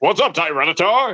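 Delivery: natural voice, full of bravado. Voicing characters, greeting Tyranitar in a bravado-ish Scizor voice. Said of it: "It's just me, but like bravado-ish".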